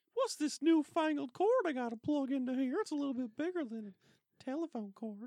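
very high, loud, squeaky mouse voice. Gamers plugging in a Nintendo cord, one voicing the complaint: Mickey voice. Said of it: "went to Mickey".

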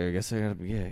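very low, mumbled muttering. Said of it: "Like you're talking to yourself".

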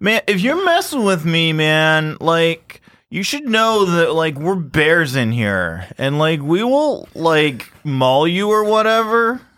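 slow, high, drawn-out call with echoing quality. Voicing a cave bear yelling at kids to leave: yelling from inside a cave. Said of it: "and you're yelling pretty loud?".

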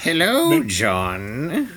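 high, swooping skunk character voice. Asked by another player to voice the skunk; skunk character voice. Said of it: "voice the skunk".

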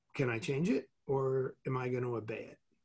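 ordinary delivery

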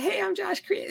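very high-pitched voice sounding like helium. Retelling meeting a football player whose voice does not fit his body: imitating Josh Cribbs's voice. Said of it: "he talks like this".

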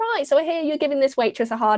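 put-on really friendly Northern English accent. Retelling what a woman said to people giving a waitress a hard time, imitating a friendly northern accent. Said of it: "in a really friendly like Northern way".

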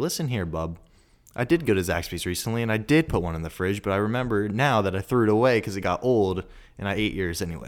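ordinary talk, nothing marked

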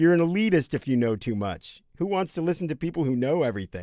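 tongue-in-cheek sarcastic tone. Joking that knowing too much about music makes you elitist: sarcastic. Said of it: "I'm being sarcastic, people".

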